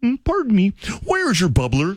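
piped-up, high, swooping voice. Retelling asking a teacher a question on the first school day: Kermit the Frog voice. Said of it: "Kermit's in full effect before I even knew I sounded like Kermit".

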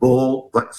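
imitated whispering. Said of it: "He whispers and he says".

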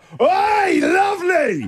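play-acted, very high, swooping yelled call. Retelling shouting from a car window in traffic at a woman, yelling out. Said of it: "I yelled out".

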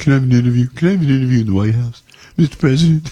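high, begging, pleading, grovelling voice. Showing how he asks the president for an interview, in a grovelling voice. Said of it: "That's my grovel voice".

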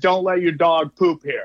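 ordinary delivery

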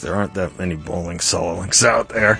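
put-on disappointed, disparaging mutter under breath. Host retells a remark heard through earpieces, under his breath disparagingly. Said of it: "just kind of say under his breath, disappointingly, disparagingly".

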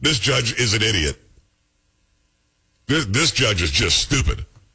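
speech broken up by laughter. Reacting to a news story about a judge's ruling, laughing while talking. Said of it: "I'm sorry if I'm laughing".

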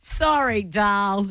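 put-on condescending, talking-down, really patronising tone. Speaker retells rolling over and answering him, retelling a patronising reply. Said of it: "in this really patronising voice".

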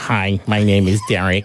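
low-pitched robotic voice. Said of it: "that would be my robot voice's name".

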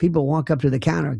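normal talking voice

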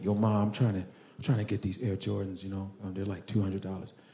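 hushed, coaxing, soft and rapid sweet-talk. Retelling asking a mother for expensive shoes: imitating own past sweet-talking. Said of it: "Just soften her up real quick".

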